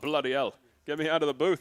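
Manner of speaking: very loud, booming, made-up British accent. Joking after a suggestion to speak British: made-up British accent. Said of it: "Sound like you made up your own accent".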